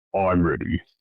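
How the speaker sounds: very deep, low voice. Voicing an unseen voice from behind the party: very deep voice. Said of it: "very deep".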